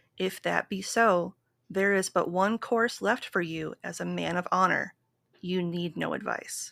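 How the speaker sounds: ordinary talk, nothing marked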